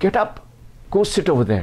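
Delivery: put-on fierce forceful voice. Retelling how a man brushed a father aside and ordered his son: mock-angry forceful command. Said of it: "in a very angry, forceful tone".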